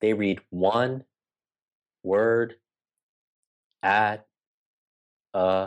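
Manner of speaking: very slow, word-by-word pace. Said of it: "it's hard to talk that slowly".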